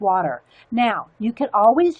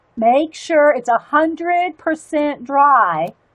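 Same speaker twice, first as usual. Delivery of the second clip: emphatic, raised classroom teacher voice; 5 semitones higher, 5 dB louder than usual. Speaker explaining a coloring step to viewers, switching to teacher voice. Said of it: "teacher voice here".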